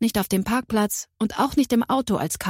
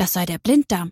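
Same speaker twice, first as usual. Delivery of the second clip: ordinary delivery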